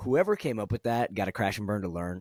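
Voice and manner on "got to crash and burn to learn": plain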